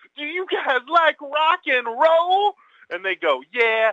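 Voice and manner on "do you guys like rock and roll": very high, loud holler. Acting out a man who dumps a can on someone in the front row, retelling a yell. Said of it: "and yells".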